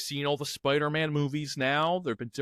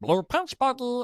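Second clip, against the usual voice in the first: put-on high-pitched cartoon character voice; 9 semitones higher than usual. Showing that the voice is easy to do, Stitch voice. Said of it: "the voice is easy to do".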